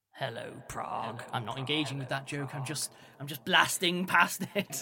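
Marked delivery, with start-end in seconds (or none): 0.2-1.2 very creepy, eerie, unsettling, hushed voice. A voice speaking into every person's ear at once, in a very creepy voice. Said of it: "a very creepy voice that has been simultaneously speaking".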